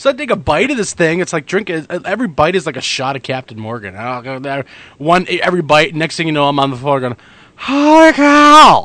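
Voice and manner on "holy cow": very high, loud exclamation with drawn-out ending. Telling how a few bites of something like a shot put you on the floor, Harry Caray impression. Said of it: "do my Harry Carey".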